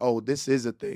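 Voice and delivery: ordinary talk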